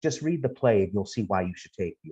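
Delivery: mock, very heavy sarcasm with swooping tone. Quoting an artist statement being read: imitating a sarcastic statement. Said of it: "very, very sarcastic".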